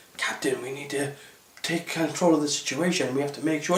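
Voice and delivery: constant, barely audible, very hushed half-whisper. Mocking a character who half-whispers all the time: imitating Michael Burnham half-whispering. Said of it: "a character ... that whispers so much".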